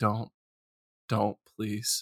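muttering under breath. Speaker retells reacting to two actors appearing in a bad movie, muttering under breath. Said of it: "Quietly under my breath".

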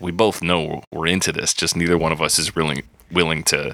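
ordinary talk

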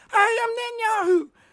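very high, silly put-on puppet squeak. Retelling how a man brought out a stick-and-net puppet, doing the puppet voice. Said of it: "he does the puppet voice".

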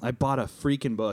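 ordinary delivery

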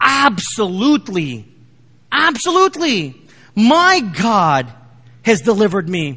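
mock lively, thrilled, swooping, drawn-out delivery. Retelling a story, voicing Daniel's first words, excited Daniel voice. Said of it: "I'm trying to get that excitement in the voice of Daniel".

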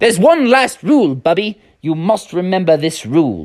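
put-on English accent, fatherly voice. Retelling a dad's last rule to his kid Bubby, English accent. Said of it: "I forgot about his English accent".

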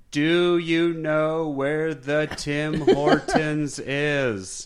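very slow, over-enunciated. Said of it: "He would just overemphasize the English".

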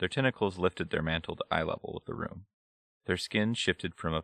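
ordinary delivery, nothing marked

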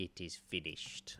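hushed, breathy whispered sci-fi villain voice. Quoting Aslan's line and asking the other speaker about it: Emperor Palpatine voice. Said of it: "I don't know why I said it in Emperor Palpatine's voice".

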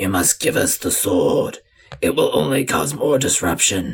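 deep, raspy, rasping creature voice. A narrator voices the lava creatures calling after the departing hero, deep raspy creature voice. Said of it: ""We are the gods of the forge and the sword making. ... but you hear a deep, raspy voice say".

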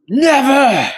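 put-on very high, shrill shout. Voicing a wounded character hit by a blast: character yelling. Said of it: "he yells out".

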